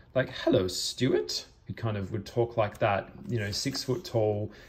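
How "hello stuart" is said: bright, very chirpy tone. Describing a character from a book greeting Stuart, in a chirpy Caleb voice. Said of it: "His voice is very chirpy".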